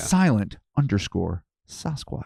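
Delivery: soft, hushed little whisper. Reading out a supporter's name: whispering. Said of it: "that's why I kinda whispered".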